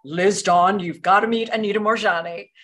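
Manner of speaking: booming put-on voice. Retelling how Wayne Dyer phoned to introduce her to Anita, Wayne Dyer's booming voice. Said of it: "with his beautiful booming voice".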